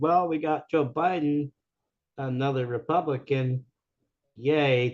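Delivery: slow, dry, sarcastic, mocking tone of voice. Retelling what a rally speaker said after the election: imitating a sarcastic speaker. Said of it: "They actually used that tone of voice, the sarcasm".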